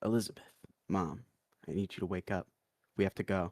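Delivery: speaking in a whisper. Waking a sleeping mother while invisible, in character: whispering. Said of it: "no louder than a whisper".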